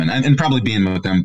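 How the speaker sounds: ordinary delivery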